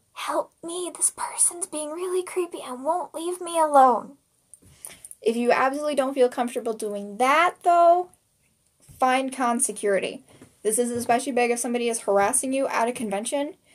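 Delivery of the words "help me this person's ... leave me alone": quiet, hushed, confidential, pitched-up voice. Advising how to ask a nearby person for help at a convention: hushed voice. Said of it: "in a hushed voice".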